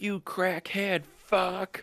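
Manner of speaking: shrill yelling, very high pitch. Retelling how the boyfriend insulted the speaker: imitating someone yelling. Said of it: "Why are you yelling at me?".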